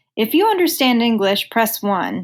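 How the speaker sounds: ordinary talk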